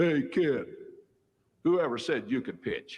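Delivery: mock snide, sneering tone, pitched high. Retelling what the opposing coach said after his first win, imitating a sneery voice. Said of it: "in kind of a sneery voice".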